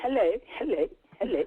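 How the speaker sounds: put-on royal British accent. Greeting the others on a call: put-on Queen Elizabeth accent. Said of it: "she's putting on an accent for you".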